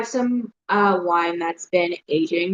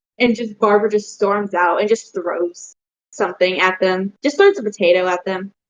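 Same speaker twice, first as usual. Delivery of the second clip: normal talking voice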